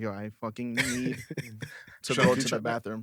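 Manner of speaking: mock straight-faced, dead-serious, urgent delivery. Retelling a friend's urgent bathroom request: imitating a friend being serious. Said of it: "I've never seen him so serious".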